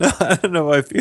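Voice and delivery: high voice, cracking up, laughing through the words. Answering another speaker who asks why they keep laughing: laughing while talking. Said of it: "you're just cracking up constantly".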